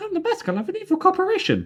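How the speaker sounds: very high, squeaky, sing-song cartoon voice. Recapping a Simpsons episode, voicing a character's Mickey Mouse impression. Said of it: "he does his Mickey impression".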